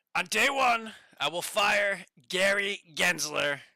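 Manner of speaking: very loud, slow, high-pitched, deliberate belting. Retelling a speech at the Bitcoin conference: Trump impression. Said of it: "let me get my impression on".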